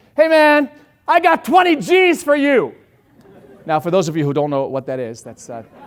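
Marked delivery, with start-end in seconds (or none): 0.2-2.8 booming, shrill, very loud, high, drawn-out holler. Telling how he shouted from his car across the street: retelling a shout across the street. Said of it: "shouted from my car to across the street".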